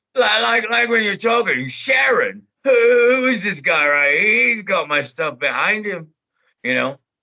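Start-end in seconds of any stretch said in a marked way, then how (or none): 0.2-6.1 slow, drawn-out character voice placed in the throat. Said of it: "like Ozzy Osbourne".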